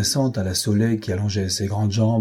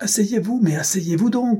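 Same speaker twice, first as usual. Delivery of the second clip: crying out at very high pitch; 11 semitones higher than usual. A narrator reads a character's plea in a boat scene, crying out. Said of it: "La Soleil cria".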